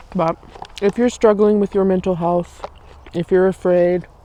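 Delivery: speaking with mouth full of food. Addressing viewers directly, talking with mouth full. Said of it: "let me not say this with my mouth full".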